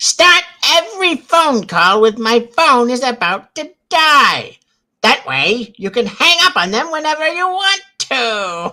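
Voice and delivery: very high, very loud, shrill cartoon skeleton villain voice. Asked by name to repeat a phone-call tip, in a Skeletor voice. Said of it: "do it in your Skeletor voice".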